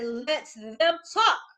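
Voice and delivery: voice jumped up an octave. Showing how to answer negative chatter: raised voice, up an octave. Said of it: "take it up an octave".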